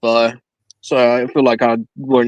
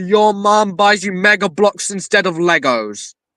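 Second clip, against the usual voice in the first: slow insulting yell with words stretched out; 8 semitones higher than usual. Speaker says what they would have yelled if thrown from a plane, acting out a yell. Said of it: "I would have yelled".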